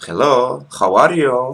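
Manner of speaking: very loud, high, over-the-top Spanish accent. Joking about how Spanish speakers sound in English, in an exaggerated Spanish accent. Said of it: "the Spanish, they will have a different approach".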